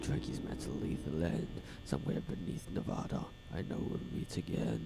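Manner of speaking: breathy whisper. Early in the morning, speaking to listeners in a whispery voice. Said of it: "Could you hear the whispery voice?".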